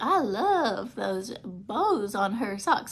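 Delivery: put-on elderly Southern belle voice with Southern accent. Retelling what Meemaw kept saying during a visit, in Meemaw's old Southern belle voice. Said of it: "talks like, I don't know, this old Southern belle".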